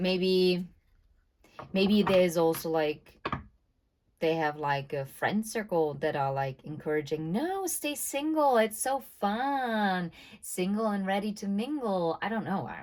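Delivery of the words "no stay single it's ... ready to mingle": grating, high put-on voice, "fun" stretched out. Speculating about friends urging someone to stay single, imitating an annoying tone. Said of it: "why I got this very annoying tone of voice now".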